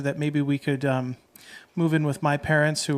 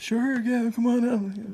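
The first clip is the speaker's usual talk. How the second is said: put-on very old man voice, high and slow; 8 semitones higher than usual. Retelling what a very old gentleman said: imitating an ancient man's voice.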